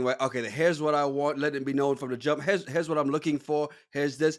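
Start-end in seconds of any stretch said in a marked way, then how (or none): none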